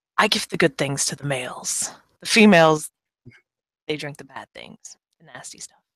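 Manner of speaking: secretive, conspiratorial, confiding tone. Voicing a man leaning in after pouring a shot: secretive, conspiratorial. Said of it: "kinda like he's trying to be secret".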